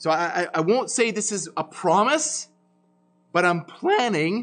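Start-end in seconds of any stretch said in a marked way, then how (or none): 3.7-4.4 voice breaking and cracking mid-phrase. Preaching a sermon series on Acts, voice cracking. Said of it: "that's my voice crack as I said that".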